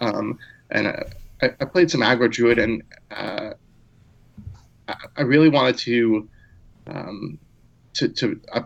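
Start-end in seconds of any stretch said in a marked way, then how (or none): 1.6-8.6 stuttering, stammering, tripping over words. Explaining a deck choice for the season on a show, stuttering. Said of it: "I'm stuttering all over the place".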